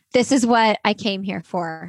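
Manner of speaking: plain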